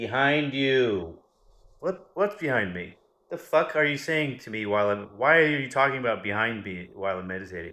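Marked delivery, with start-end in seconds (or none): 0.0-1.2 mock too-loud meditation voice, higher and louder. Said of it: "Listen to my weird voice that's too loud".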